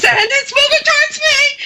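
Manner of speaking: real high-pitched squeak, very high squeaky voice. Retelling what a coworker said in the dark basement, imitating a high-pitched voice. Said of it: "real high pitch".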